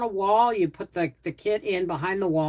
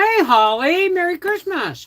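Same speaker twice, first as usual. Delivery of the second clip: slow, raised voice talking through a mouthful; 8 semitones higher, 5 dB louder than usual. Speaker greeting someone while cooking, talking with mouth full. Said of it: "now I'm talking with food in my mouth".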